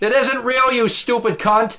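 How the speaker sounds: disgusted, flung up high. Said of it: "I'm like".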